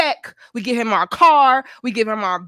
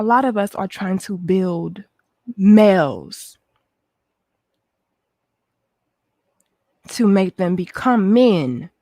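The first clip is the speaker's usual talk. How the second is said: gentle soft voice, lower; 3 semitones lower, 3 dB quieter than usual. Calming down to speak to the ladies again, speaking softly. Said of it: "talk to you softly".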